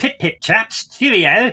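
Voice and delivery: proper British-sounding delivery. Topping the other speaker's version, saying it in a properly British accent. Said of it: "if it was properly British".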